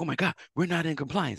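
mock frantic alarm, high-pitched, voice shooting way up. Retelling an audit at a new shop: retelling own panic. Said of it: "panicked when I walked into".

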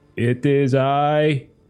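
dead-level alien voice, flat, emotionless monotone. Narrating a scene, voicing an alien voice echoing in the listener's head: very monotone alien voice. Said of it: "like very monotone, like no emotion whatsoever".

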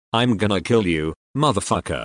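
imitated manly growl, growled and menacing. Retelling leaping out of bed at a scream in the night: imitating a manly growl. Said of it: "growled, in the manliest voice I could muster".

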